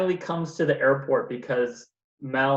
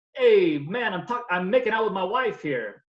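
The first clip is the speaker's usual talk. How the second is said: put-on pitched-up Brooklyn Italian mobster accent; 6 semitones higher than usual. Retelling Patroni's reply when told to get the airplane out of the snow, Brooklyn Italian mobster accent. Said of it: "an Italian mobster in Brooklyn".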